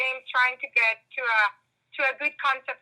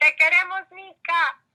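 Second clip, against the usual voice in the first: mock shrieking, loud, high, raised scream; 6 semitones higher, 5 dB louder than usual. Retelling how they cheered at the first show: retelling own past scream. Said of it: "I was screaming".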